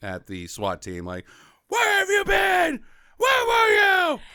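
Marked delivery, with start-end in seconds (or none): 1.7-4.2 very high, frantic, out-of-control freak-out. Retelling a movie scene where he yells at the SWAT team: imitating Nicolas Cage freaking out. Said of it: "Nick Cage is going full Cage".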